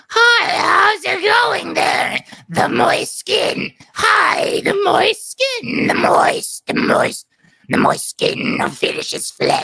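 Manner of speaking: very high, rough cartoon child voice. Demonstrating a voice technique, the speaker pushes the vocals through in a Bart Simpson voice. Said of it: "you start pushing the the vocals through".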